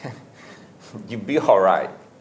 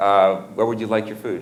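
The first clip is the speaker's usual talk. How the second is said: all flustered, hesitant, fumbling a bit. Retelling how the young receptionist brought the food: imitating a flustered receptionist. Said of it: "He was all flustered".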